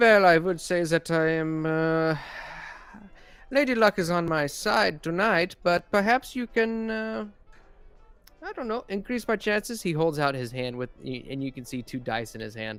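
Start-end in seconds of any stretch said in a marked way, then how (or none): 0.0-9.8 put-on English spoken with a German accent throughout. Voicing a character who answers the players, in a German accent. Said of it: "addresses you in a German accent".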